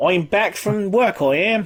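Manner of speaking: very bad, put-on Australian accent. Playing someone coming home from work, in a bad australian accent. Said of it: "it's the worst Australian accent you ever heard".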